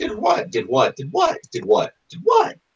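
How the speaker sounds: very high feminine voice, pitch varying. Telling a story, voicing what's heard from around the room, in a feminine voice. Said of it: "Definitely the same voice, but different pitches".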